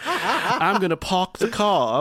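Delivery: put-on very slow, dragged-out, slipping American accent, laughing. Replaying a game and quoting a character: Saga Anderson's slipping American accent.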